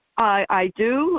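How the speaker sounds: ordinary talk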